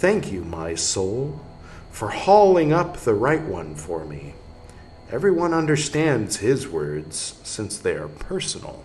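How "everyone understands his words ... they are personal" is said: normal talking voice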